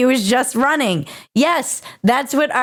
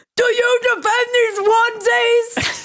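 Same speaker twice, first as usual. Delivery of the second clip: very high-pitched, slow, drawn-out delivery; 10 semitones higher than usual. Retelling a senator's hearing question: Bernie Sanders impression. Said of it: "Bernie was out there and he was like".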